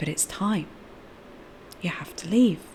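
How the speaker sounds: very quiet, fast, hushed whisper. Acting out the voice of the speaker's soul guidance, very quiet inner voice. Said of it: "There's a very quiet soul guidance".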